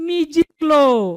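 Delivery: put-on joyful, mock-happy voice. Telling the hare and tortoise story, the tortoise at the goal: acting happy as the tortoise. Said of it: "अशा आनंदी आवाजात तो बोलतो".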